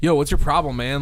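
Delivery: plain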